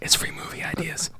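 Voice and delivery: soft, breathless whisper.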